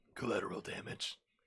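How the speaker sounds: very hushed whisper, low and gravelly. Voicing Hey You, who only repeats what others said, in a low gravelly voice. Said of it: "In a low, gravelly voice".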